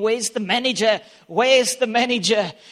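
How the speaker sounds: enraged screaming, completely out of control, repeated. Retelling how a driver ran into McDonald's: retelling someone screaming. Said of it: "he's like screaming".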